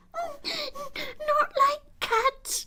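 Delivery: shrill, very high, impassioned, passionate squeaky cry. Narrating a story, voicing the mouse's reply in a shrill, passionate cry. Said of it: "cried the mouse in a shrill, passionate voice".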